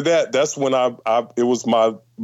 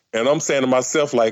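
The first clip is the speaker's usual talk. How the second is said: ordinary talk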